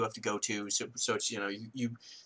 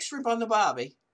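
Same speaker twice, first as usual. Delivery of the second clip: bad put-on Australian accent, much higher; 11 semitones higher than usual. Admitting they can't do one, attempting a bad Australian accent. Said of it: "I cannot do an Australian".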